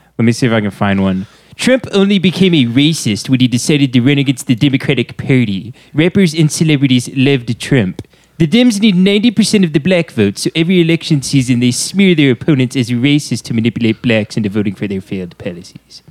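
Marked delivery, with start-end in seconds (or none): 1.6-16.1 high, swooping, sing-song cartoon voice. Reading a reply to Trump aloud in the Comic Book Guy voice. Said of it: "replies to Trump in the comic book guy voice".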